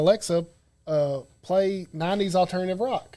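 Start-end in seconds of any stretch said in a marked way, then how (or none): none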